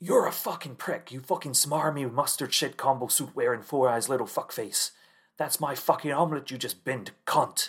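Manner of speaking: put-on high-pitched, ranting tirade. Retelling how a man reacted to his omelette being binned: retelling Irish Mick's rant. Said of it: "Irish Mick just goes on one".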